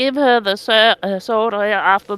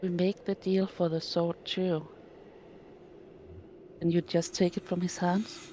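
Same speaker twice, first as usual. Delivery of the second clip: hushed, very quiet whisper, in character; 2 semitones lower, 16 dB quieter than usual. Voicing a character who asks another about a deal: whispering in character. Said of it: "in a whispered voice says".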